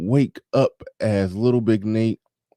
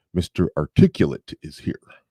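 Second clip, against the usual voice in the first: pitch dropped low, missing the target note; 5 semitones lower than usual. Giving a shout-out in an attempted impression: Agent Smith-like voice. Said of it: "I ended up sounding more like Agent Smith from the Matrix".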